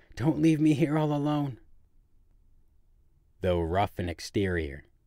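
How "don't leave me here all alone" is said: breathless, frightened, terrified cry, very high. From the bed, she calls to the wheelwright as the others leave, crying out in terror. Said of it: "she cried out, catching her suspended breath".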